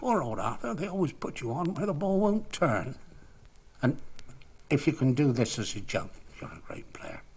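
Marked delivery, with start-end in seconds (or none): 0.0-2.9 funny, squeaky, little put-on voice. Speaker retells what a batter said after hitting him for four, funny little squeaky voice. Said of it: "in that funny little squeaky voice of his".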